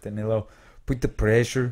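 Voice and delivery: put-on Brazilian accent. Joking about a friend from a Brazilian background: mock Brazilian accent. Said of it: "making fun of Brazilian accents".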